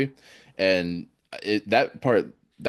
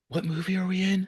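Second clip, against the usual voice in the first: very high, hushed half-whisper; 11 semitones higher, 4 dB quieter than usual. Retelling what the girl behind half-whispered during the movie: imitating someone half-whispering. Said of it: "tapped me on the shoulder and whispered".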